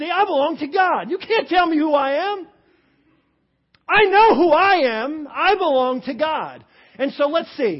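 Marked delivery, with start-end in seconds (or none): 0.1-6.6 loud, deliberate, full of attitude. Showing listeners how to say the line with attitude. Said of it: "Say that with attitude".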